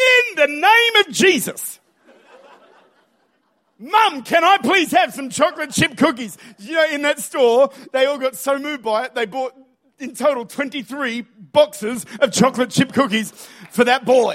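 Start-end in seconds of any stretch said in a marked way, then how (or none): 0.0-6.4 high, full-volume, top-of-the-lungs bellowing shout. Retelling a son standing up in the store trolley, imitating a top-of-lungs shout. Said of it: "at the top of his lungs".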